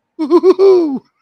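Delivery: very high, very loud, shrill, cracking cartoon woo-hoo-hoo laugh. Trying a laugh they could do before their voice dropped: high-pitched woo-hoo-hoo laugh. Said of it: "it's got a little crack at the end of it where it rips the vocal cords because it's so high pitched".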